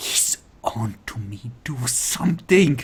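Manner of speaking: very quiet whispered speech. Voicing a character who whispers a warning to a player: whispering very quietly. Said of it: "She whispers really quietly to you".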